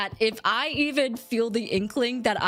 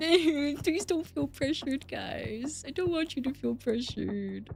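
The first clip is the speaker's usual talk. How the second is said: soft, teary voice close to crying; 4 semitones higher, 5 dB quieter than usual. Addressing viewers during a YouTube stream, on the verge of tears. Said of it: "I'm gonna cry".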